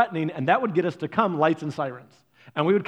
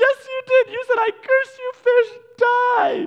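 mock very high, loud wailing through sobs; 6 dB louder than usual. Retelling Stephanie accusing Dad over her dead fish, imitating her bawling. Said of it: "Stephanie is just bawling".

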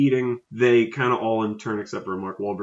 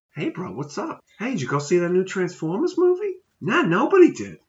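put-on swooping Boston accent, pitched higher; 9 semitones higher than usual. Joking in a group conversation, doing a Mark Wahlberg Boston-accent impression. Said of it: "You're Mark Wahlberg".

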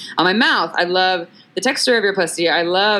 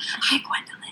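soft, hushed, barely voiced whisper. Retelling how a partner talks to Gwendolyn: imitating a whisper. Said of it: "he whispers to her".

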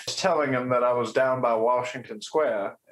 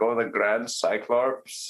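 put-on Indian accent. Reminding someone how they used to say it, in an Indian accent. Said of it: "but like in an Indian accent".

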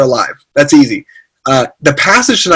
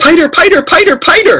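put-on screaming toddler voice, much higher. Parent retelling how their toddler son ran into the house, imitating Theophilus screaming. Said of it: "he's screaming".

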